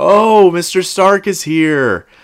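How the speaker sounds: very sarcastic, very high, very slow and drawn out. Recapping a scene where a prisoner greets a visitor to the holding cell, retelling sarcasm. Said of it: "gives this very sarcastic clap".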